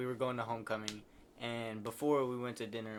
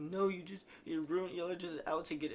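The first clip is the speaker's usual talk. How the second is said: mock drunk screaming, much higher; 7 semitones higher than usual. Retelling how a drunk girl in the back yelled at the cop, retelling drunk screaming. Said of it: "she's like screaming".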